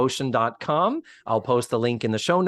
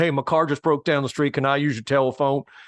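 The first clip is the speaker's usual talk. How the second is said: put-on casual, relaxed Southern accent. Quoting a character who shows up at an episode's end: Robin Williams Southern accent. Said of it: "a guy with a Southern accent".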